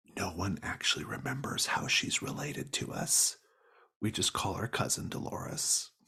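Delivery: quiet whispered aside. Voicing a character who leans in to another character: whispering. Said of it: "he kind of whispers to you".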